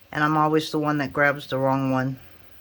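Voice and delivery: plain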